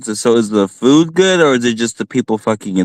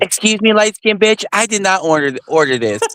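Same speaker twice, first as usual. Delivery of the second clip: rude, nasty, high-pitched complaining voice; 8 semitones higher than usual. Acting out a rude diner speaking to a server: imitating nasty, rude talk. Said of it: "Very nasty".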